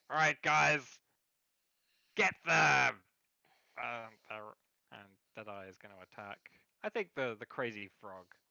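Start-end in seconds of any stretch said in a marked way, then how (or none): 0.1-2.9 raspy, rough pirate shout, very loud. Narrating a game, Deadeye yells at the stunned pirates: Deadeye yelling an order. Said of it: "Deadeye just yells at them".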